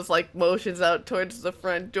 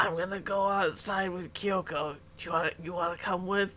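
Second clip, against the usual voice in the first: speaking in a whisper, quieter; 8 dB quieter than usual. Voicing Kara inviting someone to come outside: whispering. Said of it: "Kara whispers, like".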